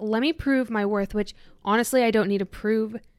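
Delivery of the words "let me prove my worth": ordinary talk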